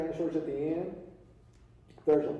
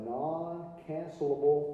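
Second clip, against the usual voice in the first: slow, careful delivery. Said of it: "I have to say that real slow".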